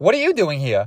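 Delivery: attempted cartoon duck voice, repeated. Speaker retelling a joke, trying to do the Donald Duck voice. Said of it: "I'm trying to do the voice".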